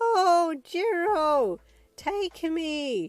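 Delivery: very high, very loud, shrill begging. Narrator reads you voicing a dress at the changing rooms for Jerry, high-pitched begging voice. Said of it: "in a high-pitched begging voice".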